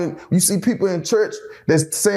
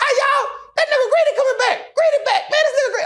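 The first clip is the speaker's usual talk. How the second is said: acted, very high, shrill, high-pitched scream. Retelling an inmate calling out through a window: imitating someone screaming.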